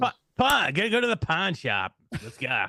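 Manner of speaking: put-on New York accent, pitched very high. Asked by the others to say a word like a New Yorker, New York accent. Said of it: "with a New York".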